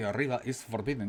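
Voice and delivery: ordinary talk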